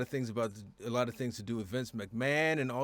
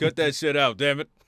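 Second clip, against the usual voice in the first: booming, full-volume, very loud dad voice; 9 dB louder than usual. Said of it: "put on that dad voice right there".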